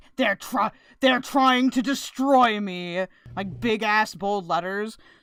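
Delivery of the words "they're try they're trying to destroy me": mock angry voice. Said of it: "all mad".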